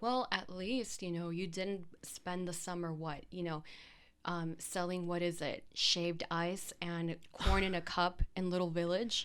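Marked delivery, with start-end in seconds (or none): none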